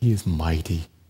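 gentle, soft, very low delivery. A speaker shows how to say the phrase again differently, softer tone. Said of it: "A little softer tone".

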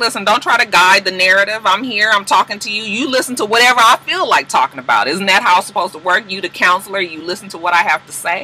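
plain

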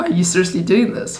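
quick, laughing, half-joking tone. Retelling trying to stop a woman at the salon, in a jokey, laughy way. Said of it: "in a jokey, laughy way".

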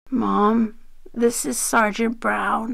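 gently and softly spoken, quiet and held back. The narrator introduces a sergeant to their tearful mother, soft. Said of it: "I said softly".

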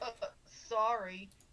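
mock offhand, insulting tone. Retelling how a stranger apologized after spilling the fries: imitating an insulting, offhand sorry. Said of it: "The dude just said in this kind of tone".

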